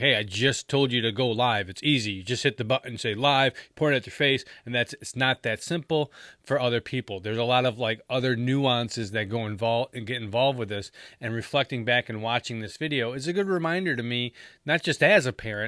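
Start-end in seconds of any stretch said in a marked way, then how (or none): none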